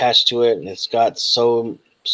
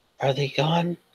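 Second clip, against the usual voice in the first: put-on voice like a little child; 4 semitones higher, 6 dB quieter than usual. Voicing a strange creature asking the players a question: childlike voice. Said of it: "in a, like, childlike voice".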